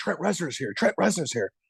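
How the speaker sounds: crowd half-whispering under the breath, hushed stage whisper. Retelling how people nearby half-whispered about a famous guest, imitating people half-whispering. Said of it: "they all were whispering".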